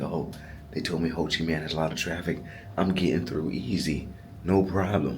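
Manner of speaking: plain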